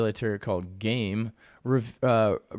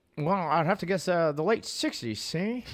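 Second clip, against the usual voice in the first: put-on old-timey 1920s Hollywood accent, pitched higher; 5 semitones higher than usual. Answering a question when asked to reply in a 1920s voice. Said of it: "answer this question in a nineteen twenties voice".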